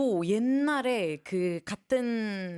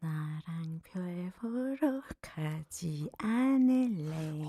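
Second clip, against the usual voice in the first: eerie horror-movie tone, lower and quieter; 3 semitones lower, 4 dB quieter than usual. Performing the line "let's go stargazing", sounding like a horror movie. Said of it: "이거 약간 호러-, 호러 무비인데?".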